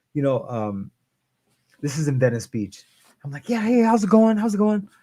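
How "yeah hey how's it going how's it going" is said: very high, wired and bouncy, acted out. Retelling arriving at therapy, imitating own past hyper self. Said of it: "bouncing off the walls".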